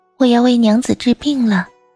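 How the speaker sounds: trembling voice. Narrator voicing a woman's line in a story, in a trembling voice. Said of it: "女子颤声说".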